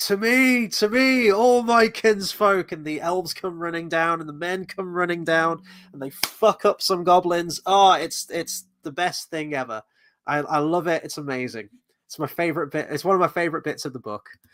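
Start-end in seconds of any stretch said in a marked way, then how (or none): 0.0-2.7 very slow, long-carrying, drawn-out yell, high and loud. Retelling a favorite book scene: imitating a yell across a valley. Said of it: "he just yells across the valley".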